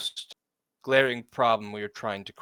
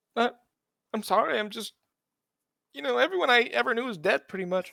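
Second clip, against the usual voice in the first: very high voice, sobbing and crying through words; 11 semitones higher than usual. In a role-play, a character who is told to stop crying, speaking while crying. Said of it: "It's best you stop crying for now".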